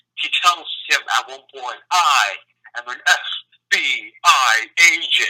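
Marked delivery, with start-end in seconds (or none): 1.9-5.3 every word stretched very slowly. Retelling a movie scene in a Keanu Reeves voice. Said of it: "in just the most Keanu Reeves voice ever".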